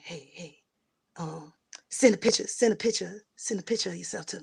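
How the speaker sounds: creepy, insistent stage whisper. Retelling a creepy phone call: imitating someone whispering. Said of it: "He was whispering like".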